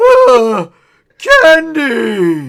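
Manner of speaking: put-on booming kid voice, very high and very loud. Narrating a scene to Sparky where a kid reaches the candy bowl, booming kid voice. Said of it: "in his booming kid voice".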